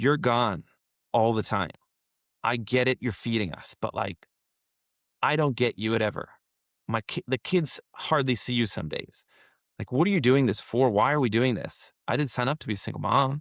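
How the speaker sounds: ordinary delivery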